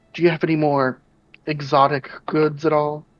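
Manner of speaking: voice brought down to a confidential-sounding hush. Speaker acting out asking a merchant for exotic goods, lowered voice. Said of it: "I'll like lower my voice and say".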